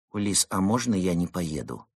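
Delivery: ordinary delivery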